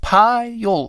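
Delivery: ordinary delivery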